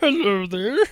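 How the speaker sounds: bad, high-pitched cartoon frog puppet voice. Eyes closed, all of a sudden hearing: Kermit the Frog voice. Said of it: "that's a terrible Kermit the Frog right there".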